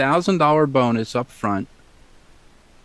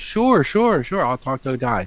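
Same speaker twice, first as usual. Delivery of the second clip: ordinary delivery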